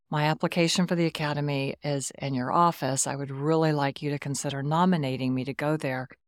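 plain

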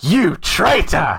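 shrill, high, loud, genuinely hurt and upset voice. Retelling a mother's reaction to a reveal: imitating upset mum. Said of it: "got so upset at me".

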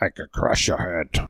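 very low, deep, rumbling voice. Trading lines from Strange Brew: Max von Sydow impression. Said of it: "Just us doing impressions of him only from Strange Brew".

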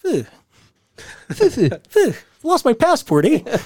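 very high voice with huffing, puffing phew sounds. Showing how Bobby talks: Bobby imitation. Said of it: "That's how Bobby talks".

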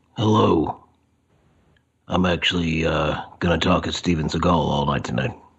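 acted rough, gravelly voice. Greeting the podcast listeners: gravelly Steven Seagal voice. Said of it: "it's too gravelly".

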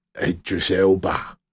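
bad impression with low, slow voice.

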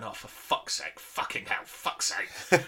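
mock under-breath muttering. Retelling a furious man who just smashed his car, imitating muttering under breath. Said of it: "under his breath I could see him like going".

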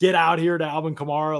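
high, put-on screaming voice. Retelling a player screaming at the sideline: imitating Lavonte David screaming. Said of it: "Lavonte David is screaming at the sideline".

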